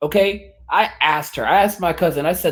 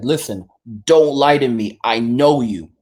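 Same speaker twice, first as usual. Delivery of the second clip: put-on stern, serious tone, lower pitch; 4 semitones lower than usual. Retelling a warning given to a cousin: imitating own serious warning. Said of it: "I got really serious with her".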